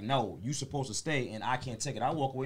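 plain

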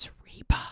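hushed, very quiet, discreet, barely-there whisper. Retelling leaning over to her husband at a deli, retold whisper. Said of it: "I whisper".

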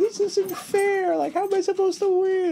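put-on very high, sobbing child's voice. Retelling kids losing at Uno in a video: imitating a crying kid.

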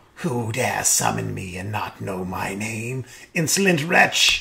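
sibilant, hissing harpy voice, scolding. Narrating a fantasy scene, a summoned harpy woman answers the summoner, hissing. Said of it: "The woman hisses".

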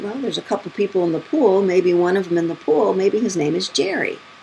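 ordinary talk

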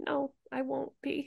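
whispered. Retelling what a woman answered a man who called her a crybaby, whispering. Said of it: "The woman whispering".

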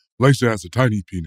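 deep, very low-pitched voice. Retelling what he said at a restaurant, in a low voice. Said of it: "his voice is all low".

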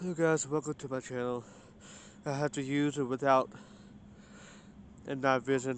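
out of breath, winded. Welcoming viewers to the channel just after running, out of breath. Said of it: "out of breath".

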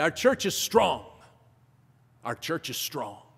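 put-on Liberian English accent. Quoting the church pastor speaking to him: Liberian English accent. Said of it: "in a nice Liberian English accent".

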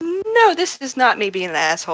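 sickly sweet, innocent voice. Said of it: "using her sickly sweet voice".

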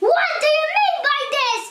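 furious, angry cry. Running up to the sailor doll, crying out angrily. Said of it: "he cried angrily".

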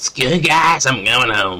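put-on cartoon kid voice. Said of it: "I cannot do Carmen's voice really good".

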